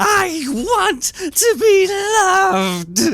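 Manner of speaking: swooping shriek, very high and very slow. Narrating something bursting out of the limo toward the bishop, shrill screaming voice. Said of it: "you hear a shrill voice screaming".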